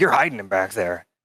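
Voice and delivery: put-on, frantic freaking-out outburst. Retelling a customer's mother confronting the speaker at work: imitating someone freaking out. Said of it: "she came in just freaking out at me".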